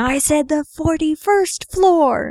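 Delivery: acted-out, all-out, high screaming. Retelling a movie scene where a character dives out: imitating Falcon screaming. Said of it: "And he's screaming".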